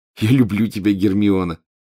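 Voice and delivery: ordinary delivery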